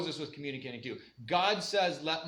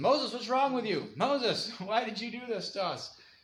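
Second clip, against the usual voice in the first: mock angry, accusing yell, pitched up; 6 semitones higher than usual. Retelling how the people yelled at moses: imitating people yelling at moses. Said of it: "they're yelling at Moses".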